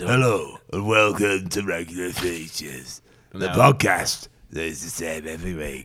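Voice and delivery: deep film trailer announcer voice. Podcast hosts joke about trailer voices; he opens the show in a deeper movie-trailer voice. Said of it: "his voice is a little bit deeper. Like this".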